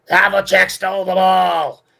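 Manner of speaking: very loud, high-pitched, belting courtside announcer voice. Remembering a Celtics TV announcer's calls, doing a Johnny Most impression. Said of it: "This is the best imitation I could do".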